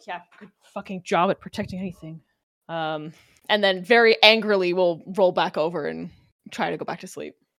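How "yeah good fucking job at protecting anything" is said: quieter mock mumbling. A speaker acts out how she mumbles before rolling back to sleep, imitating someone mumbling. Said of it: "kind of mumbles something like".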